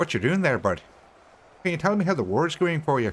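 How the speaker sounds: attempted Canadian accent. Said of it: "you said it was Canadian as well".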